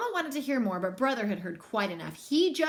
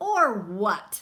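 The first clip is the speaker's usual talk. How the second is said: sneering voice, louder; 3 semitones lower, 4 dB louder than usual. Reading a story, Too Tall answers Brother's demand, Too Tall's sneer. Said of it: "Sneered Too Tall".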